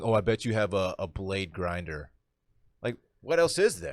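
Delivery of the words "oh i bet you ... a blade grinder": mock smug know-it-all voice, slow and snide. Retelling a comment someone made about grinders: imitating a snide taunt. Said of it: "someone chirped at me saying".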